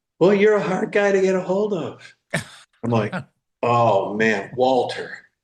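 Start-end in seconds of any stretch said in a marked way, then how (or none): 0.2-2.2 small, high-pitched little voice. Retelling a night-time phone call from Walter, imitating Walter's little voice. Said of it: "there's that little voice that says".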